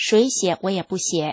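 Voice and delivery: ordinary delivery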